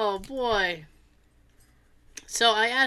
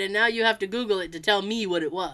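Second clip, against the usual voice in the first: plain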